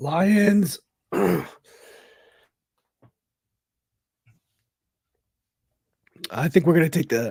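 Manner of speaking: coughing through strained words. Answering a question about the Lions game while choking on a drink: choking while talking. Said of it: "I'm choking over here".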